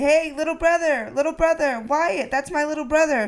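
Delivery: put-on, high-pitched, calling-out yell. Retelling calling after a little brother in the hallway: imitating a yell. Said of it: "that's 'cause you're yelling, "Little brother."".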